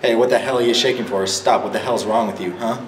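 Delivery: ordinary delivery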